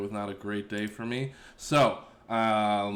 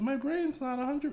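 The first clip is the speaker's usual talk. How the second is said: grating, very high, annoying put-on voice. Speaker apologizes for silly spelling mistakes, then says a line in an annoying voice. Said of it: "that's an annoying voice".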